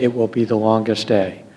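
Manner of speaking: imitated rueful sadness. Retelling what he said to his men, in a sad, rueful voice. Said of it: "in a sad, rueful voice".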